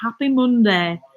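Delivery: imitated northern English accent. Retelling how someone else said happy Monday: northern accent, imitating Akilea. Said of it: "He was saying it in a northern accent".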